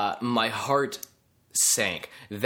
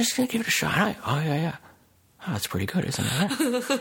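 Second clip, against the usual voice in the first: hushed put-on voice, pitched higher; 8 semitones higher than usual. Showing a hushed monologue selling a burger: hushed Jimmy Stewart monologue. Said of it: "Jimmy Stewart could be telling me anything in a hushed monologue".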